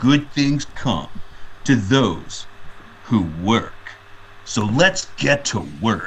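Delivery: gruff, slow, macho tough-guy voice. Describing a commercial's opening, the speaker quotes its narrator in a tough guy voice. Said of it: "It's like it's like this tough guy voice".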